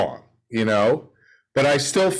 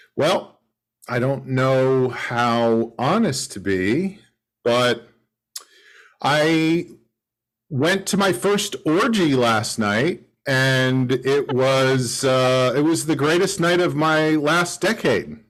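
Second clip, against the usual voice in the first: ordinary talk, nothing marked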